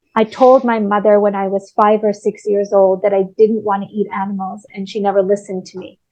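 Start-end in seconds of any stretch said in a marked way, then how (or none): none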